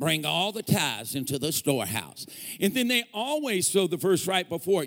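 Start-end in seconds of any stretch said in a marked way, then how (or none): 0.0-2.3 put-on Kentucky-style Southern US accent. Imitating preachers quoting a tithing verse: imitating a Southern US accent. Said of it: "they're gonna sound like they're from Kentucky".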